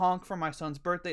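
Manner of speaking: plain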